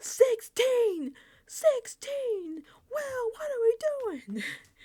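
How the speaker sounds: put-on very high, loud shrieking scream. Retelling a group-chat audio file, imitating Quinn screaming at the phone. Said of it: "he's just screaming at the phone".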